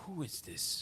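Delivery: put-on feminine voice with old masculine sound. Voicing a phone answerer: feminine voice with old masculine sound. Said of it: "The voice is, is feminine, but it has, it's an old masculine s-, sound".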